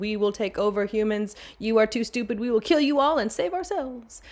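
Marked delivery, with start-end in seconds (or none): none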